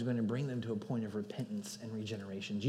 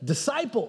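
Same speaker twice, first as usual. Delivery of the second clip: strong, full emphasis placed on disciple; 12 semitones higher, 6 dB louder than usual. Showing how a reader of the greek aloud would say it: emphasis on disciple. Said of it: "you'd emphasize it by literally saying".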